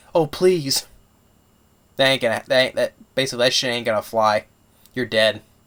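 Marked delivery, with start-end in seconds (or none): 0.1-0.8 groveling, begging, pleading tone. Retelling a film scene where a guy begs: imitating begging. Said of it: "all of a sudden you're begging, saying".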